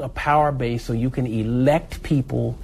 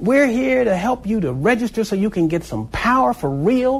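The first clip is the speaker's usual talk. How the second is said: high, pleading holler. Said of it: "I said".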